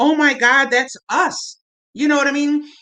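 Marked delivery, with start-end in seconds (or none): 0.0-1.6 slow, tearful, overwhelmed put-on crying, words through sobs. Describing people on an island hearing the day their plane went down, imitating someone crying. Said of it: "sitting on the island crying like".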